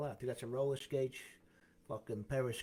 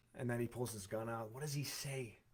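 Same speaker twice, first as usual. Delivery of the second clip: ordinary talk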